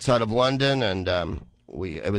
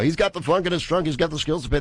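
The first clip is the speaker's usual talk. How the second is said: high, bouncy sports announcer patter; 5 semitones higher than usual. Retelling improvised pod race lines: imitating a sports announcer. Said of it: "do sports announcers and go".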